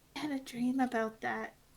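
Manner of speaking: tiny, hushed, quietest possible voice. Voicing a character who says she had a dream: quietest voice she can manage. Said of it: "she says in the quietest voice she can manage".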